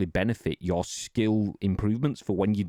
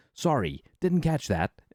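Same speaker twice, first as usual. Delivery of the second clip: high, Americanized synthetic voice-assistant voice; 5 semitones higher than usual. Retelling a voice assistant's reply to a spoken request: imitating an Americanized AI voice. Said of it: "fucking Americanized A I voice goes".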